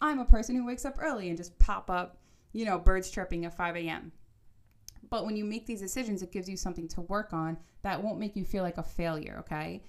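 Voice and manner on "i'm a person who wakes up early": high-pitched, loud, fast, eager morning-person voice. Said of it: "be like".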